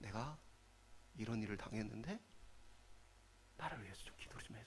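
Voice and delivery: soft, whispered, desperately pleading voice.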